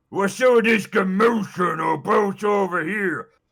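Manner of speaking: very brutish, ogre-like voice. Narrating a game scene as massive footsteps approach, brutish ogre voice. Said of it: "in a very brutish type of voice".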